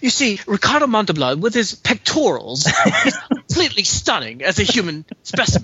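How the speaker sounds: bad put-on British accent. Answering a request for a report in British: terrible British accent. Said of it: "That's a terrible British accent".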